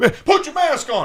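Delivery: acted-out, very high, furious, shrill screaming. Retelling a plane fight, acting a man screaming at another: imitating someone screaming. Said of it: "as he pulls his mask down to scream at him".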